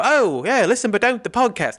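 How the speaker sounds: put-on British accent. Speaker mocks british women who host a podcast, in a mock british accent. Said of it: "You know how I do like the British voice".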